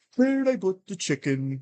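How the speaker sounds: silly, odd-sounding, high-pitched goofy voice. Retelling a strange voice heard while half asleep: imitating a goofy voice. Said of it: "same voice say".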